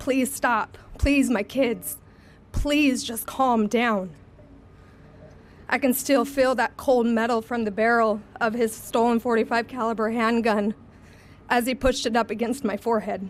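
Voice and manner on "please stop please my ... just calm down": acted-out desperate pleading. Recounting being held at gunpoint, the speaker reenacts begging the attacker to stop. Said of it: "begging this monster to stop, pleading with him".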